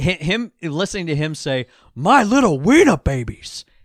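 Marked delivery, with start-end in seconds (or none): 1.9-3.6 very loud, high-pitched, belted character voice. Quoting a line from a movie: Al Pacino voice. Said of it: "Al Pacino voice".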